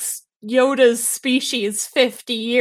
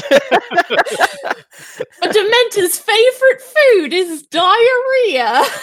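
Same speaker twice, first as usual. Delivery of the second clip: deliberately bad put-on British accent, high and loud; 9 semitones higher, 5 dB louder than usual. Speaker quotes a line from a ProZD video to the group, bad British accent, ProZD quote. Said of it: "We're back on bad British accents".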